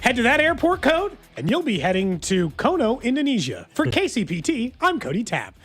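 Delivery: cheesy peppy newscaster voice. Signing off a news segment, cheesy news guy voice. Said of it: "my cheesy news guy voice".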